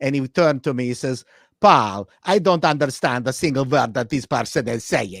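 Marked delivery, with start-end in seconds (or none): 1.6-5.2 put-on Hungarian accent. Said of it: "with his Hungarian accent".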